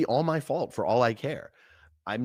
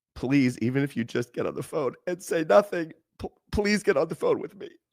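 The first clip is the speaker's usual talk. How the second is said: mock tearful pleading, high pitched, begging; 5 semitones higher than usual. Retelling a late-night phone call: imitating someone begging. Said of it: "I'm begging you".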